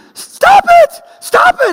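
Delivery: shrill, very high, very loud, slow, drawn-out scream. Retelling how her startled mother jumped up from a dream, retelling mother's scream. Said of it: "she started screaming".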